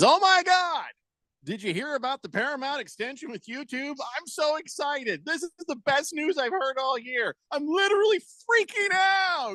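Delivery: play-acted, very high-pitched sarcastic gushing. Reading a listener's chat message aloud, imitating sarcastic excitement. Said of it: "I know sarcasm when I hear it".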